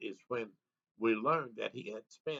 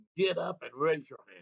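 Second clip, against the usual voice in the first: mock rough, loud, gruff barked delivery; 4 semitones higher, 5 dB louder than usual. Retelling a deputy's order at gunpoint: imitating a loud, gruff command. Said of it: "He said in a loud and gruff voice".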